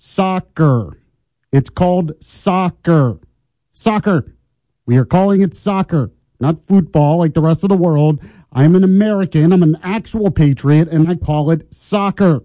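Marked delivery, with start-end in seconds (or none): 0.0-4.4 very slow, deliberate, over-careful, word-by-word delivery. Speaking to an audience who all want the shirt, saying it very slowly. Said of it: "I'll say it slowly for you".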